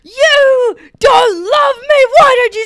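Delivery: re-enacted scream. Retelling coming home and screaming at someone: retelling screaming at someone. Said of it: "I was screaming at Ben".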